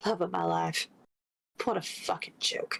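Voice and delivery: muttered under her breath. Playing a character leaning against a bookcase in an office: muttered under her breath. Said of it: "she just kind of mutters under her breath".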